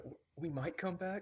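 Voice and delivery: whispered voice. Whispering an aside to another player: whisper. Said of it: "I'll just whisper to the side".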